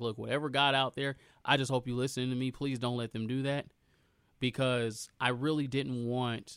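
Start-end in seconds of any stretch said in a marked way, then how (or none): none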